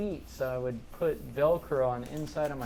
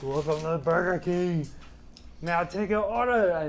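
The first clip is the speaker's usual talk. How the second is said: terrible, loud, booming put-on Austrian accent; 4 semitones higher, 5 dB louder than usual. Working a Burger King drive-through at fifteen, doing an Arnold Schwarzenegger impression. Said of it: "I would always do like Arnold Schwarzenegger".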